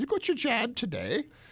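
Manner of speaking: put-on English accent, pitched way up. Quoting how the English ask about a vaccine: English accent. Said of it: "am I allowed to do an English accent".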